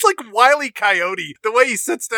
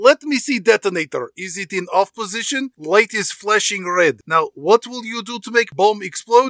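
put-on Russian-accented character voice. A boss gives orders to his henchmen: Rostov's Russian accent. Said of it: "Gee, boss, / You're a charismatic leader with the screaming and the yelling and the Russian accent".

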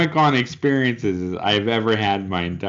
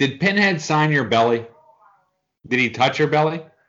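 called out with pitch raised; 6 semitones higher than usual. Speaker says they will yell, then calls out a question: yelling. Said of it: "I'm gonna yell".

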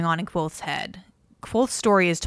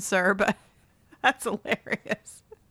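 words breaking up with hard laughter; 3 semitones higher than usual. Reacting to a listener's story about being woken by screaming: laughing hard while talking. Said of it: "I'm sorry I'm laughing so hard".

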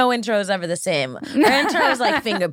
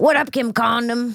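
casual tone, sounding pleasantly surprised; 3 semitones higher than usual. Retelling how Uncle Joey greets her on calls: imitating Joey Diaz. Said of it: "He'll call".

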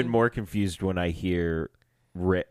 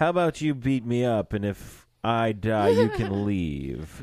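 strange stresses placed on the wrong words. Praising a scene, the speaker quotes the character: Leonard Snart impression. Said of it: "that was a really good impression".

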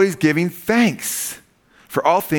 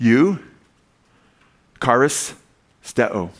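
eucharisteo slow, syllable by syllable; 3 semitones lower than usual. Teaching the Greek word for thanks, said slow, syllable by syllable. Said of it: "I said it slow".

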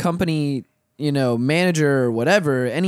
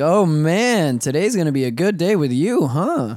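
ordinary talk, nothing marked

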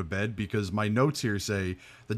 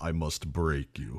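put-on deep, low voice with a Russian accent; 5 semitones lower, 4 dB quieter than usual. After mentioning Ivan Drago, the speaker slips into the Ivan Drago voice. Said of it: "that Ivan Drago voice".

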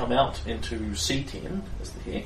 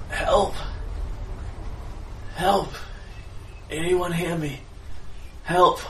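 woman's high-pitched cries; 7 semitones higher than usual. A game master voices a distant woman calling out, woman's voice calling for help. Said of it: "a woman's voice going".

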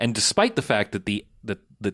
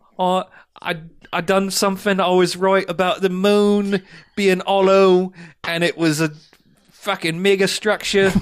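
put-on slight Australian accent, pitched up; 8 semitones higher, 3 dB louder than usual. Acting out a character's speech, slipping into an Australian accent. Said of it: "I went a little Australian there".

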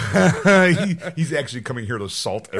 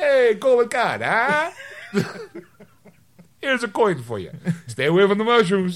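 put-on Italian accent, higher; 5 semitones higher than usual. Joking about the Pope visiting, sounding like Mario. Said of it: "Why do you sound so much like Mario?".

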